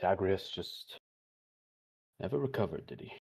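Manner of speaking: muttered aside, under the breath. A wizard trading at a merchant stall remarks aside, muttered under his breath. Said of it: "sort of say under his breath".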